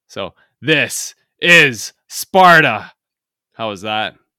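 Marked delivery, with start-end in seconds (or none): 0.2-2.9 mock-aggressive shout, put-on aggressive accent, louder. Speaker lays down a This Is Sparta for the other to better, mock-aggressive shout. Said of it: "I was trying to go very aggressive there".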